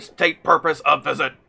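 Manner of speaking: monotone robotic voice. Voicing a robot guard questioning the visitors, in a monotone robotic voice. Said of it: "a very monotone robotic voice".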